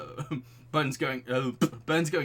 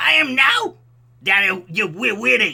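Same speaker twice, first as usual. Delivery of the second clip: bad, shrill, very high, very loud screech; 9 semitones higher, 13 dB louder than usual. Reading a line aloud in a terrible voice: Gilbert Gottfried voice. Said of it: "we're doing a Gilbert voice".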